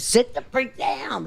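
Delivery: high, slow, stern scolding.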